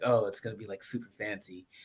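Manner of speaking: soft, lightly sarcastic aside. Retelling an earlier idea for a show name: retelling own sarcastic remark. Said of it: "a little sarcasm".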